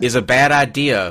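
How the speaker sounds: ordinary delivery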